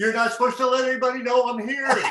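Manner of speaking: mock screamed, very high-pitched, scolding tone. Retelling a friend's reply from the back of a bar: imitating Walter Payton screaming. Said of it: "he starts screaming at me".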